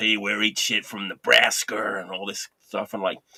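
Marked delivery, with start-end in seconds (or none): 0.0-2.0 slow, heavily laid-on fake American accent. Retelling a band's stage banter: imitating a fake American accent. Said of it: "speaking in, like, you know, fake American accents".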